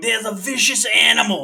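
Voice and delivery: nature documentary presenter voice, like a wildlife host. Joking about someone on his show: Steve Irwin impression. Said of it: "that's like Steve Irwin on his show going".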